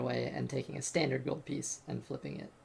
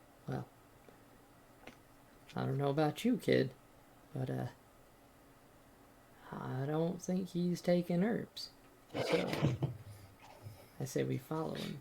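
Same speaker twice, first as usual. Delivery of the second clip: voiced stage whisper. While the other player checks something out, a character half-whispers to them. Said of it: "I'm going to uh, whisper to you".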